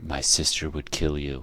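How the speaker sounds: hushed, close, leaning-in half-whisper. Voicing a character who leans close to a player: half-whispering in someone's ear. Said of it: "whispers in your ear".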